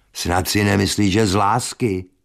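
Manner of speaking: scornful, disdainful and dismissive tone. Alois answers the narrator's question about why he married her: contemptuous. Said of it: "řekl Alois pohrdavě".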